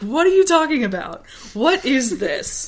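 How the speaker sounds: very indignant, high outburst, acted out. Retelling a story scene where the character gets very indignant. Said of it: "Luke gets very indignant".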